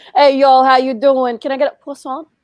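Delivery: loud, put-on Brooklyn accent. Recalling bakery customers placing an order, imitating a brooklyn accent. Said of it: "they'd have their Brooklyn accents".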